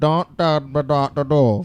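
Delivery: very slow, very drawn-out camel voice. Showing what camels sound like in their heads: camel voice. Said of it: "exactly what camels sound like in their heads".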